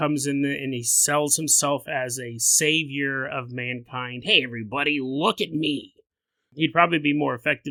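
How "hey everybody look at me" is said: comic-book villain voice. Voicing the Antichrist selling himself as savior: Heath Ledger's Joker voice. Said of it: "didn't sound like Heath Ledger's Joker".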